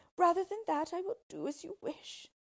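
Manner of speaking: very high voice, crying out. The princess, turning to the dwarf, cried out. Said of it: "she cried".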